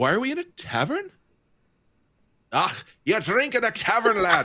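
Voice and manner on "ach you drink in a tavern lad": put-on Scottish accent, higher pitch. Playing a character in a tavern in a d and d game: scottish accent. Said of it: "has chosen to have a Scottish accent in the D and D game".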